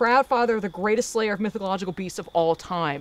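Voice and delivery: ordinary delivery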